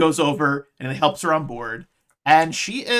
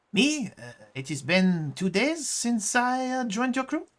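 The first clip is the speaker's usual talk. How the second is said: put-on French accent on English, pitched up; 7 semitones higher, 5 dB quieter than usual. A crew member, asked how long they've been on the ship, answers in a french accent. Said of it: "I think I'm doing all right with the French accent".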